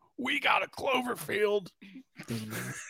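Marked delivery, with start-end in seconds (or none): 0.2-1.7 gravelly, scratchy, slow home-shopping pitchman voice. Imitating a home shopping channel seller offering a toy: deep, scratchy shopping-channel voice. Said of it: "the Home Shopping Network guy would be like".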